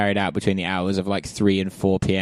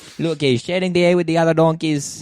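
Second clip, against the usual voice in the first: fake Greek accent, higher pitched; 8 semitones higher than usual. Joking that the donkey is a communist: put-on greek accent. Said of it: "doing the accent".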